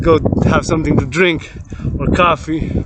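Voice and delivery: plain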